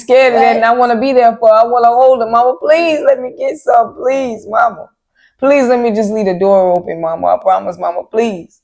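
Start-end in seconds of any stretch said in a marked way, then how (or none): 2.3-8.4 crying, tearful, begging plea. Retelling how a boy pleaded with his mom, imitating him crying and begging. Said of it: "never seen him crying and begging".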